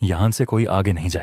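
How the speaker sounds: ordinary delivery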